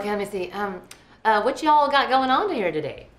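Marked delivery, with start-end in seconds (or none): 1.4-2.9 attempted Southern drawl accent. Practicing after being told to say y'all, in an attempted southern accent. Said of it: "that was a little Steel Magnolia".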